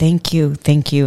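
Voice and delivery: plain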